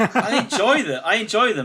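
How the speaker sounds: loud, high laughing protest.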